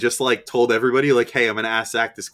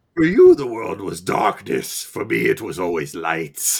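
put-on animated movie character voice, wide swooping pitch; 2 semitones lower than usual. Speaker quotes a line in a Bane voice. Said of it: "I love talking in Bane voice".

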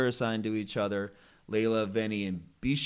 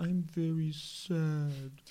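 mock little moping child voice, soft, high, sad, drawn out; 6 semitones higher, 6 dB quieter than usual. Imitating how a contestant talks when sad: imitating Kovid sounding sad like a child. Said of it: "when he's sad, he's like".

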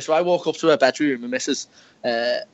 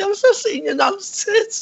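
very high, slow frantic blurt. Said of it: "mate, I was like".

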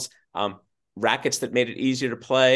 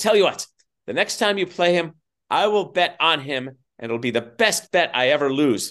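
high-pitched, grandly theatrical delivery. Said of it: "making a grand theatrical statement".

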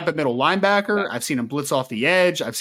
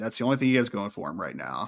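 dripping, super-sarcastic delivery; 5 semitones lower, 5 dB quieter than usual. Joking about a football player with co-hosts: super sarcastic. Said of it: "I'm saying super sarcastically".

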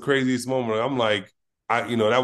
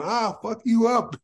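mimicked screaming, much higher; 10 semitones higher than usual. Retelling a woman being pushed back while threatening the speaker, retelling her screaming. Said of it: "she's screaming".

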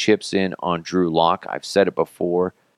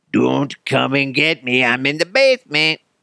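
high, creepy, lurking creature voice; 6 semitones higher than usual. Everyone in the house asleep, alone in the basement, in a creature-in-the-basement voice. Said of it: "that's like my I'm a creature in the basement voice".

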